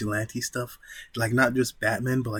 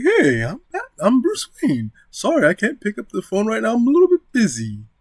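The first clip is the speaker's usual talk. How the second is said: very high and loud with wide swooping pitch; 11 semitones higher, 8 dB louder than usual. Showing how the Bruce Wayne voice should differ: Bruce Wayne voice. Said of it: "the voice change".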